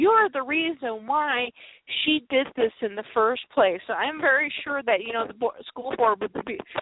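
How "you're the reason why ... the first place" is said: ordinary delivery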